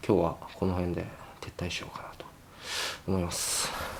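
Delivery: soft, hushed whisper.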